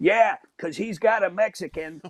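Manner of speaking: acted-out high yell from off to the side. Retelling a talk with Mike, speaker mimics Kathleen in the background: imitating Kathleen yelling out. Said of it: "Kathleen yells out".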